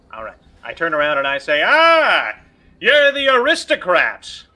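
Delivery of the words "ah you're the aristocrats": too loud, very high, swooping, drawn-out voice. Greeting the aristocrats in character: speaking too loudly. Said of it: "we should probably keep that a little bit quieter".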